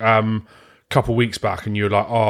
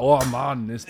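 imitation Scottish accent; 4 dB quieter than usual. Imagining how people in Edinburgh will react to a friend: put-on Scottish accent. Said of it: "What the fuck was that?".

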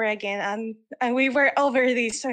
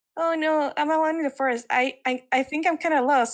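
mock crying, higher pitch; 4 semitones higher than usual. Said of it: "And he starts, like, crying".

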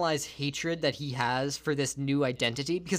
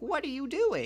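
put-on much higher-pitched little old lady voice. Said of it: "an old lady comes by and's like".

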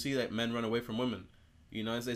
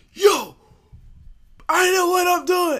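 very loud, shrill, fed-up angry snap, acted out; 15 dB louder than usual. Recalling the moment they lost patience, retelling snapping at someone. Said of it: "And I snapped".

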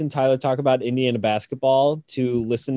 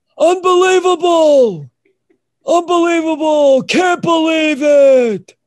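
belted out, high and loud; 9 dB louder than usual. Having meant to do a Batman that would come out wrong, do a Dick Vitale impression. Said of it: "can you do that impression".

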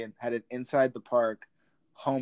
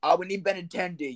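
mock brash Bronx New York voice; 7 semitones higher than usual. As if a loud local fan were being stopped on the street by an interviewer, answering fast and confident in a thick city accent. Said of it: "in their New York accents".

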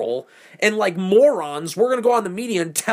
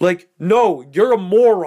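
ordinary delivery

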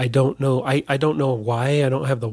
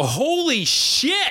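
acted-out yell, much higher pitch; 12 semitones higher than usual. Retelling seeing it on their phone at work: retelling own yelled exclamation. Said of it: "the first thing I just yelled out".

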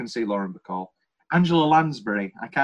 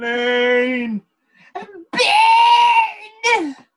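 piercing, very high, loud scream, one word drawn out; 7 dB louder than usual. Discussing a film's ending, doing a Katharine Ross scream impression. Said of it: "My famous impression of Catherine Ross's scream".

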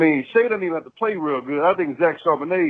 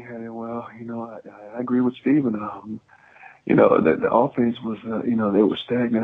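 put-on relaxed flat monotone, much lower pitch; 5 semitones lower than usual. Speaker imitating how the person addressed sounds: mock relaxed monotone. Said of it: "you're just real monotone".

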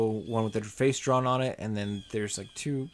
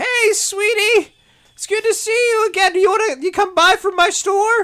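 very high, loud hag merchant voice. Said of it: "every single one of them are just".

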